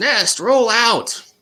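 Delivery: shrill, very loud, very high villain scream. Narrating a story, voicing a masked lady as she jumps out: screaming a command. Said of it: "And she screams".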